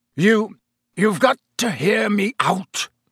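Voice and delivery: croaking voice. Reading a novel aloud, voicing a character's plea to be heard, croaking. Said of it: "he croaked".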